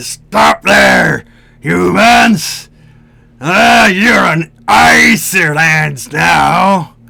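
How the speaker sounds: coarse, rough orcish voice. Storyteller voicing orcs who stop the listeners' party: coarse barking orc voice. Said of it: "you hear the the coarse barking of orcish voices".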